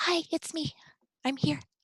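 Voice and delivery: hushed, soft whisper, high-pitched. Whispering to a robot companion while invisible: whisper. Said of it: "and then I whisper".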